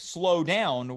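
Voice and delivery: ordinary talk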